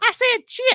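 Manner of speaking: put-on small child's southern accent, pitched way up. Retelling own childhood words to mom, little southern accent. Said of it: "my little Southern accent".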